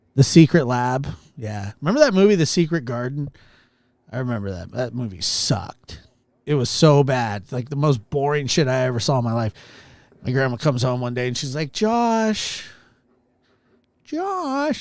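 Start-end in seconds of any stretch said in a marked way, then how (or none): 11.8-14.9 put-on high, meowing, cat-like old lady calling voice. Grandma comes home calling her grandson, imitated in a cat-like voice. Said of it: "used to sound like a cat".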